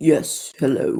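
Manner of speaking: very deep, put-on macho manly-man voice. Voicing a startled man greeting someone who has just approached him, very deep voice. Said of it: "it's even deeper than my voice".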